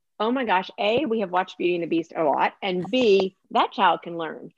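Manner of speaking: plain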